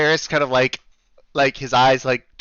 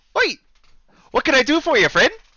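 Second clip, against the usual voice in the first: put-on Canadian accent, higher pitched; 11 semitones higher than usual. Voicing an innkeeper greeting the players as they walk in: put-on canadian accent. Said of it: "please just deal with the accent".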